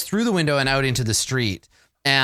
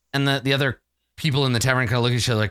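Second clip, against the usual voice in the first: usual speaking voice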